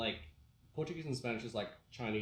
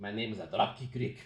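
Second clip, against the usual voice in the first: said loud in Mexican accent; 5 dB louder than usual. Voice actor demonstrates the wrestler character he voiced in a video game: Dropkick Rick voice. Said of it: "doing like a Mexican accent".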